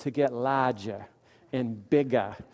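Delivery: put-on New England accent, laid on. Preacher repeating a phrase for his listeners, in a New England accent. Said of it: "in the New England accent".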